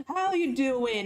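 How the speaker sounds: matey, chummy best-buds tone. Voicing a character who puts an arm round someone's neck: chummy best-buds greeting. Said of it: "putting a arm, his arm around you in a kinda like a headlock, like, you know, like, you guys are best buds".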